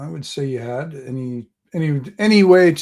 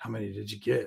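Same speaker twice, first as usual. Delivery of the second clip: low, very quiet, under-the-breath grumble; 4 semitones lower, 13 dB quieter than usual. Retelling what a bulky man asked the halfling, retelling a mutter under breath. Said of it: "he kind of under his breath goes".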